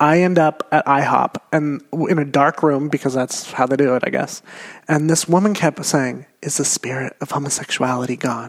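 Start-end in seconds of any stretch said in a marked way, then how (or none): 6.4-8.5 quiet, hushed near-whisper. Retelling a woman praying over them in a dark room: imitating someone half-whispering. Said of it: "just whispering this".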